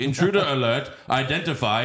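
mechanical robot butler voice, like a security system. Retelling a movie scene where Robot Alfred finds an intruder: Robot Alfred voice. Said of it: "Robot Alfred is like".

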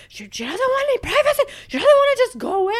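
very high, loud, swooping exasperated frustrated yell. Speaker retells one frustrated night, re-enacting screaming at her. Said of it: "I'm like screaming at her".

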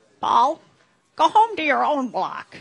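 very loud, high-pitched grandmother voice shout. Correcting the host, she quotes what her grandmother actually said: imitating her grandmother. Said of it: "this is kind of imitating her".

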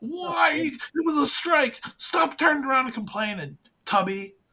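very high, screaming voice. Acting out other fan bases yelling at their TV, imitating fans screaming. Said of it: "they're screaming at their TV".

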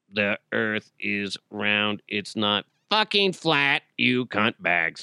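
robotic, speech-synthesizer-like voice. Imagining Stephen Hawking giving a lecture, Stephen Hawking impression. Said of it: "What did he sound like? He's like".

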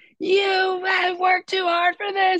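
acted-out scream. Retelling telling oneself off at a locker room mirror: imitating screaming at oneself. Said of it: "I was screaming at myself".

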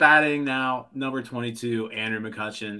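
ordinary talk

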